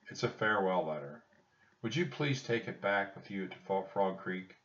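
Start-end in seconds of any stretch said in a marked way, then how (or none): none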